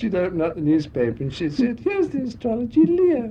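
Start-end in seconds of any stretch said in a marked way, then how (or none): 1.8-3.3 silly showgirl voice. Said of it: "she used to talk in this silly voice".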